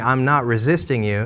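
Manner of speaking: plain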